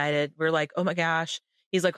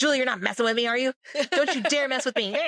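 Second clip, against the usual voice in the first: furious angry yelling, high and fast; 7 semitones higher than usual. Retelling the mom's reaction to the pregnancy news: imitating angry yelling. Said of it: "She's like yelling at me, angry".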